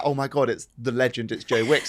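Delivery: ordinary talk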